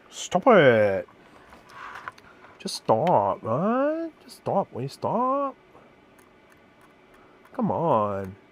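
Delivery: very slow, exasperated, frustrated, swooping, drawn-out rising tone. Struggling with a test that keeps failing: frustrated. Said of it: "I'm getting frustrated now".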